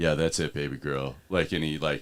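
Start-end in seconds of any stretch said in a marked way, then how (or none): 0.0-1.2 mock seductive, sensual voice, lower and quieter. Imitating a guy online who puts on a voice: imitating a guy's put-on sensual voice. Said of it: "that one dude that puts on that voice".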